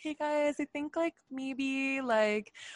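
high, gentle, nervous hedging, easing in. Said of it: "you say it in a really gentle way".

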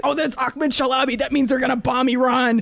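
acted-out yelling. Speaker describing a man with a megaphone shouting at cars, retelling a yell. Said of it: "he's like yelling at the cars".

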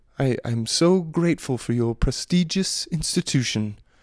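put-on snooty hoity-toity upper-crust accent. Imitating a parent sending their child to a send-away school: hoity-toity accent. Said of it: "It's like a hoity-toity accent".

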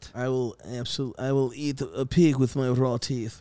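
terrible put-on Russian accent. Imitating a movie character's terrible fake Russian accent. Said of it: "very American doing Russian accents".

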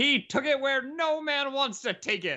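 put-on bravado impression voice. Retelling an announcer's call of a basketball game, Kevin Harlan bravado impression. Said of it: "his voice with his naturals like bravado".

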